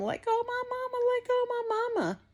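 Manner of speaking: put-on very high, swooping child's cry. Retelling what the little daughter screamed during the attack: imitating a child screaming. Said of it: "she was screaming".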